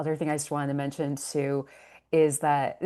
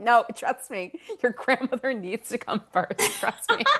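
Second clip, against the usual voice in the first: high, swooping, motherly mom voice; 8 semitones higher than usual. Quoting a mother's voice heard in the head: imitating mom's voice. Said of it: "my mother's like".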